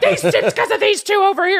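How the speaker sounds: put-on very high, swooping, angry, blaming yell. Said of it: "she yells and blames it on them".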